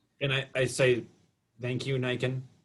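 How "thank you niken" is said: very flat, dead level monotone, no inflection. Speaking in character to Niken, in a very flat voice. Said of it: "in a very flat voice".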